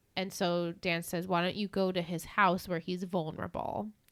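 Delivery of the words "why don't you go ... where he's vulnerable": ordinary talk, nothing marked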